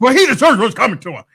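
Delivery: serious, very high pitch. Imitating how another speaker just said a line: imitating a raised, serious voice. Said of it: "your voice raised, you got serious".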